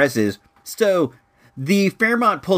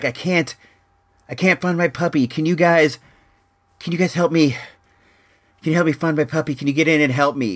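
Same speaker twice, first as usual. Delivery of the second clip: rushed, winded, huffing, breathless panting; 2 semitones higher than usual. Retelling a guy in a car asking for help finding his puppy: imitating someone out of breath. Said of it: "he was out of breath".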